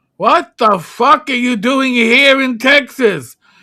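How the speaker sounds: put-on very loud, high-pitched Brooklyn cab-driver accent. Retelling what a cab driver asked: Brooklyn accent. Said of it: "He talked like this".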